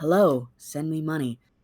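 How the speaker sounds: pretend whispering. Pretending to be a voice in the listener's ear: mock whisper.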